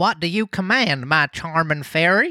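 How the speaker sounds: put-on old-prospector country voice, folksy. Voice actor reading a line addressed to a blue fairy, corn-fed country voice. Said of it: "corn fed kind of like you know range on Boy".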